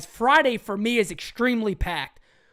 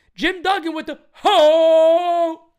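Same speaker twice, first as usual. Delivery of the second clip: loud voice cracking on drawn-out ho; 6 semitones higher, 8 dB louder than usual. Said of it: "A little voice crack there".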